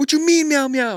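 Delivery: acted-out baffled yell, very high and loud. Retelling how a man yelled at everyone in the back, retelling a yell. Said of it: "And he's like yelling at all of".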